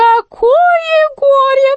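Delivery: pained groaning moan through the words. Narrator reads the jester's cry after he grabs his back: groaning. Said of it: "простонал он".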